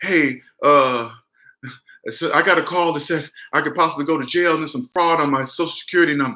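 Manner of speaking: faked, frightened, scared voice. Retelling calling the scam callers back, put-on scared voice. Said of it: "and I put on my scared voice".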